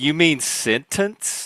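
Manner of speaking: put-on crisp, enunciated T in "sentence". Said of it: "I've never in my life pronounced the T".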